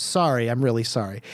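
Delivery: mock oddly exposed, vulnerable, giving-up tone. Retelling how a character apologizes to her parents: imitating a vulnerable apology. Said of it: "in a very, like, weirdly s-, vulnerable way".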